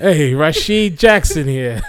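horrible, bad put-on Boston accent. Introducing himself under a made-up name, in a horrible Boston accent. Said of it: "That was horrible Boston accent".

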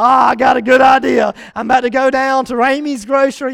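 loud, excited, scheming tone.

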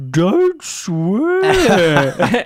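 very high, swooping, sing-song voice. Showing how a dad says his phrase: imitating dad. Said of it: "I impersonate my dad. ... My dad has this thing where he's like".

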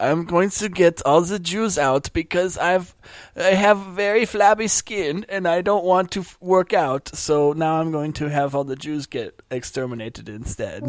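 high, slow, drawn-out tyrant and dictator voice. Joking about war with another speaker, doing a Hitler impression. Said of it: "that was my Hitler impression".

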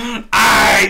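screamed, loud and high-pitched.

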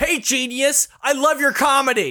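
hostile, aggressive delivery, pitched very high. Demonstrating a reverse heckle at a comedian, in an aggressive tone. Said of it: "saying supportive words in an aggressive tone".

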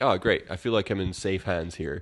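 plain

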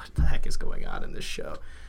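whispered, baffled aside.

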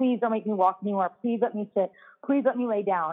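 play-acted pleading, begging over and over. Retelling how she begged during labor to stop walking: imitating own past begging. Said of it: "begging and begging and begging her".

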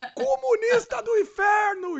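high-pitched, jeering, heckling yell. Telling how they start yelling when they see nonsense: retelling a yell. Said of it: "eu já começo a gritar".

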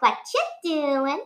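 high cartoonish character voice. Asked to do a voice once more, giving the Isabella voice. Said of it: "Can you do your Isabella voice again?".

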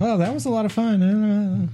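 high put-on girly voice, playful and drawn out. Game master voicing the woman the player just danced with, in a girl voice. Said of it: "I'm getting really tired of doing girl voices".

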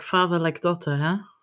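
quiet mutter, as if to oneself. Player's character studying her before they go in, muttering under breath. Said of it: "under my breath mutter like".

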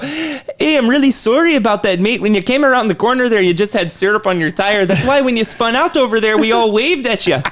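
put-on Canadian accent in a high voice. Speaker imitating how people in Canada talk: put-on Canadian accent. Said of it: "They speak like this in Canada".

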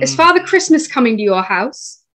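fake, not-very-good, put-on British accent. Playing one of three Brits talking about Christmas, in a fake British accent. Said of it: "With my British accent. That's fake and not really that good".

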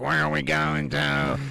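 distinctive slow, creaky, rasping drawn-out drawl. Imagining getting in his Uber, imitating his distinctive voice. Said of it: "But he talks like this".

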